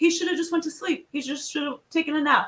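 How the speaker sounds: put-on Russian accent. Retelling what a competitor said after tapping out, in a russian accent. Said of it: "with his Russian accent".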